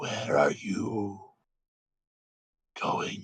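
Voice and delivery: whispered, slow, snake-like dragon voice. Voicing a voice the listener hears in their head: snakish dragon voice. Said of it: "kind of very snakish".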